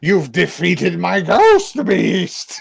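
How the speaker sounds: very wacky sorceress voice, high and loud. Retelling an anime scene where the sorceress speaks first: imitating a wacky sorceress voice. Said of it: "in the wackiest voice I've ever said".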